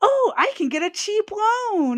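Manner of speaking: mock naive whine, high-pitched and slow.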